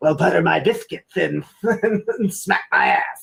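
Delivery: creaky, rough reptilian lizard-person voice. Voicing a talking butter in the story, speak like a lizard person. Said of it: "the Butter talks like a lizard person".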